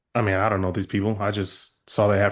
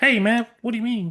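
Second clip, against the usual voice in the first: small, very high-pitched voice; 14 semitones higher than usual. Voicing a massive alien who answers a player: tiny Mike Tyson voice. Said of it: "So it's like".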